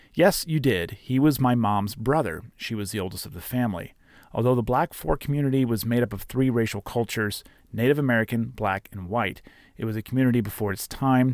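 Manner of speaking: usual speaking voice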